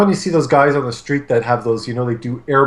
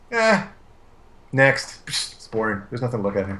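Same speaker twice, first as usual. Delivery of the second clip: soft, sing-song, tongue-in-cheek sarcastic tone; 3 semitones lower, 6 dB quieter than usual. Looking at a competition entry with a co-host, the speaker says, sarcastic dismissal. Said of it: "You know I'm being sarcastic".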